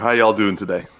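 aggressive forceful tone. A podcast co-host greets listeners at the start of the show, aggressive greeting. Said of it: "Why you always say that so aggressive?".

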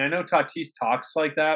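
ordinary delivery

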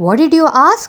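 furious, angry, loud, high barking shout. Ranguru's uncle answers the boy's question, shouting angrily. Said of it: "shouted his uncle angrily".

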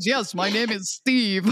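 deliberately deepened fake low voice, slow. Acting out a woman gamer hiding her voice online: put-on low voice. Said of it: "I'm gonna talk in a low voice".

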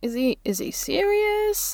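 puzzled, confused, very high, slow, drawn-out. Voicing her reaction to a question: confused. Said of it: "in a confused".

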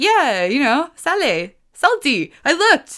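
high, loud, excited and proud. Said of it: "Because I was like".

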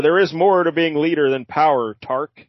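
ordinary delivery

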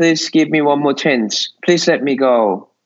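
acted crying, tearful pleading tone. Recounting begging an angry man for mercy, retelling a tearful plea. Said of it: "I was crying hard".

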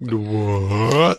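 slow-motion, heavily stretched-out, drawn-out delivery. Mimicking someone who finally answers after being called repeatedly: mock slow-motion answer. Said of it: "Like the slow motion answer".

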